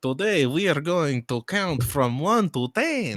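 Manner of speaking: put-on very loud, high-pitched vampire accent. Doing an impression of the Count from Sesame Street: the Count's vampire accent. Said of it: "I'm doing an impression of Count from fucking um uh Sesame Street".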